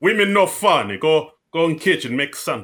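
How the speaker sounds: Albanian accent impression. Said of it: "my Albanian impression".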